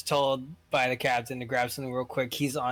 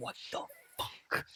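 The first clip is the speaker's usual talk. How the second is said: very soft, breathy whisper, said as an aside. Voicing a character who hears clicking behind him: whispering to himself. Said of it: "whispering to himself".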